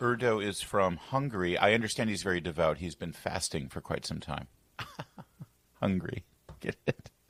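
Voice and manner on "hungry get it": words broken up by laughter. Making a pun, laughing while talking. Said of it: "Why are you laughing?".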